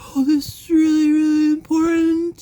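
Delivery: very high, very loud, pompous put-on voice. Showing how to make your voice sound important: put-on self-important voice. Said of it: "you make your voice like".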